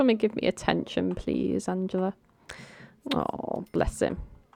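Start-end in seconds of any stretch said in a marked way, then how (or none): 0.0-2.1 whiny, pleading, whinging dog voice. Voicing a pet dog begging Angela for attention: whining dog voice. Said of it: "he's whinging. He's like".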